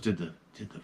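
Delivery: low, hushed, barely audible whisper. Retelling what her daughter asked her about the fan, whispering. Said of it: "She whispered".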